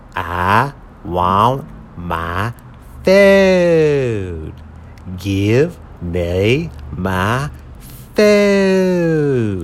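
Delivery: swooping, wailing dinosaur-like voice. Narrator reads a character demanding his food, said like a dinosaur. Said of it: "He kind of said it like a dinosaur".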